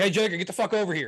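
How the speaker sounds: put-on easy-going holler, mild and light. Acting out what they would say to call a kid over: imitating own yell. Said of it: "if I have to yell".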